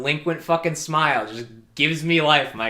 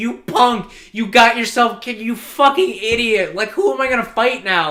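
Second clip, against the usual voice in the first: loud, sobbing, tearful screaming, pitched up; 11 semitones higher, 7 dB louder than usual. Retelling how the rival storms into the funeral: imitating someone screaming in tears.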